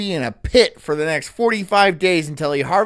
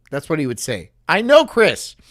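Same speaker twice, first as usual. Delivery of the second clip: plain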